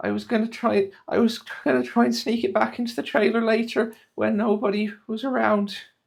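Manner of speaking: crying through the words, very high-pitched. A game master voices Hadda, sobbing into her wood carving, sobbing while talking. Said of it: "Hadda is just sobbing into her".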